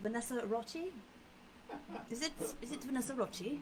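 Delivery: soft, high, put-on British accent. Asked to say the name like someone from Great Britain, in a put-on British accent. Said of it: "Do that like you're from Great Britain".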